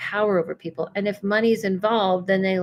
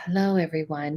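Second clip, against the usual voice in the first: hypnotic, otherworldly, all-knowing guru-style put-on tone; 3 semitones lower, 3 dB quieter than usual. Explaining how people get caught up, the speaker shows a changed hypnotic otherworldly tone. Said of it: "you change your tone and you talk like this".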